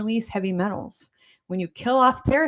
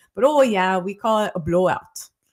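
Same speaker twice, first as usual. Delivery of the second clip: put-on half-managed, not-so-good Jamaican accent; 4 dB louder than usual. Retelling what a woman said once a memory came back, not-so-good Jamaican accent. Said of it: "So there's my Jamaican accent".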